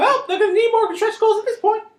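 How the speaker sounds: very high, squeaky voice. Chatting with others, who then ask for it to stop: Mickey Mouse voice. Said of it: "Could you quit doing the Mickey voice?".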